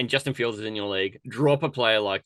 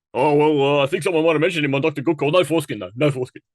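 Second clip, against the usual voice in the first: loud, high, abrupt, barging voice; 5 semitones higher, 7 dB louder than usual. Imitating how Taylor would break in here: imitating Taylor. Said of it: "Taylor would break in here and go".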